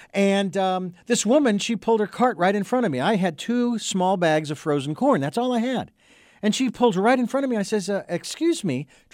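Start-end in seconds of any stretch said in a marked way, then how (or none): 7.9-8.8 courteous, polite, friendly, cheerful tone. Retelling asking a woman who cut in line to move back: retelling a smiling polite request. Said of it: "trying to keep a smile on my face".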